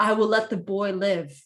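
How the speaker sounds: very deep echoing voice. Voicing a creature speaking Abyssal to the party: very deep echoey voice. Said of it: "its voice is, like, very deep".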